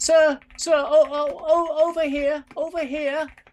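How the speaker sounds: very high, loud calling voice. Narrating to the listeners, voicing someone calling from behind them: higher-pitched voice. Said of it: "you hear a higher pitched voice behind you".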